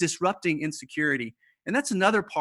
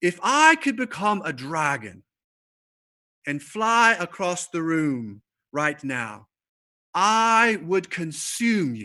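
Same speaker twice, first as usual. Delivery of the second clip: put-on clear British accent; 4 dB louder than usual. Retell how he challenged a student who talked too much, in Jerram Barrs's British accent. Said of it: "he has this British accent".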